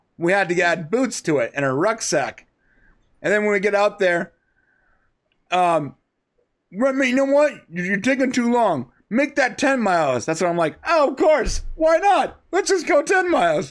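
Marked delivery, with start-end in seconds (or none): 10.9-13.7 very high, sarcastic delivery. Recounting being ordered to march farther, retelling a sarcastic answer. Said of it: "I sarcastically answer".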